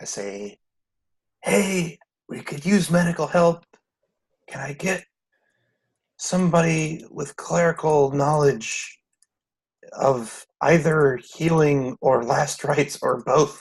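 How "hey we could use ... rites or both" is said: higher, pleading whisper in a character voice. Voicing a character calling out for medical help: whispering in character. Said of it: "I just whispered into the space".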